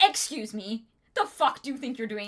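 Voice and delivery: offended, indignant voice, sounding insulted. Retelling a book scene where Dalinar summons a Shard Blade: offended Stormfather voice. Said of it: "Gets very offended".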